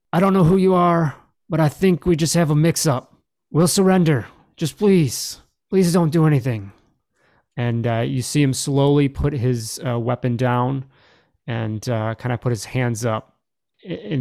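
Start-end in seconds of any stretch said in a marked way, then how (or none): 0.1-6.7 raised, high-pitched yelling voice. Voicing a wounded enemy surrendering at blaster point: yelling out. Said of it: "and just yells out".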